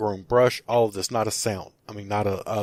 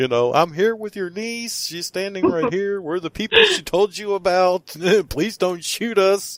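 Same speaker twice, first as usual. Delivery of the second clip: mock top-of-the-lungs shout, very high pitch; 10 semitones higher, 3 dB louder than usual. Retelling shouting to a figure thought to be her uncle, retelling a yell. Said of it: "I'm yelling at the top of my lungs".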